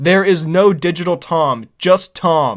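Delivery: play-acted angry, forceful delivery. Retelling what the star said to the filmmakers, mock-angry Tom Cruise impression. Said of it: "Tom then angrily said".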